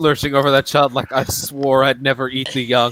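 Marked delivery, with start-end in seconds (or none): none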